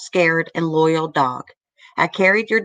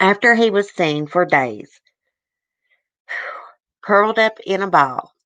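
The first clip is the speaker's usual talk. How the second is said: tearful voice, catching and choking up; 3 semitones higher than usual. Reading a sad story aloud to viewers, choking up. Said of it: "God, I can't read it, guys".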